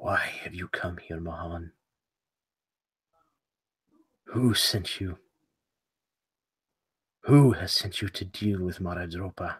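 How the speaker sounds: hushed, half-whispering inner mental voice. Narrating a scene, voicing a woman whose voice half-whispers in the listener's mind. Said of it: "this voice whispers in your mind".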